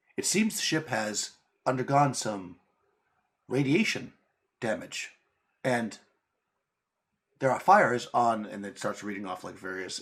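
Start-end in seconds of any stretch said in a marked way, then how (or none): 0.2-8.5 chill, calm, drawn-out onboard computer voice. Quoting the ship's computer while describing it, in a Suleiman computer voice. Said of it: "kind of a low, kind of chill voice".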